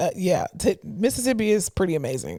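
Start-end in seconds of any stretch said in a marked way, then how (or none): 0.8-2.4 swooping, sarcastic praising tone. Answering a remark about mississippi in a conversation: sarcastic. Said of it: "I'm being sarcastic when I say that".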